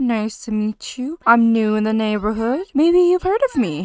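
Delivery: flirty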